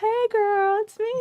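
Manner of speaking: put-on very high, sweet, sugary baby-angel voice. Imitating the other speaker's mom, in a sweet baby angel voice. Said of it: "she has a sweet baby angel voice".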